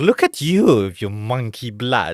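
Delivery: acted snooty elderly woman voice. Imitating a villain like an old lady: imitating Frieza like an old lady. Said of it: "he's like an old lady".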